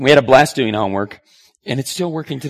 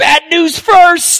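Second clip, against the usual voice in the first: loud groaning moan pitched very high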